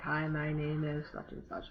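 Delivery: very quiet, flat, level monotone. Showing listeners how not to sound when introducing yourself, flat monotone. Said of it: "sound like you're talking like this".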